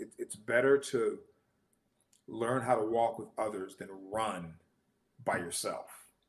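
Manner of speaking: ordinary delivery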